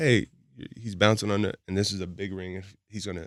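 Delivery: ordinary delivery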